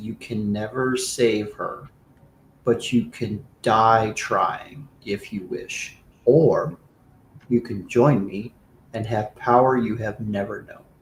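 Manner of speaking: whispery, whispering voice. Voicing a cold otherworldly presence speaking into a character's mind: whispery voice. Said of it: "And it said in a very, like, whispery voice".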